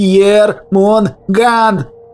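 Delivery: shrieking hysterically. The serpent answers Erema, hysterical shriek. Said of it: "Вновь истерически взвизгнул змей".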